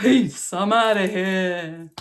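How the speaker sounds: breezy, unhurried, loud delivery.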